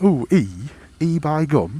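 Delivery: very slow, drawn-out put-on Cockney drawl. Retelling what a bus driver said at the airport: imitating a Cockney accent. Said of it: "in his fucking Cockney accent".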